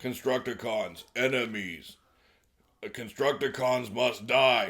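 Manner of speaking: put-on furious raging. Recapping a scene, voicing Omega Supreme on seeing the Constructicons: Omega Supreme going berserk. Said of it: "Omega Supreme immediately goes berserk".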